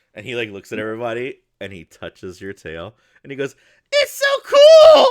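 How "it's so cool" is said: very high, loud, excited squeal, voice cracking. Retelling how a guy touched someone's tail and reacted, imitating a voice crack. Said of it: "his voice cracks and everything".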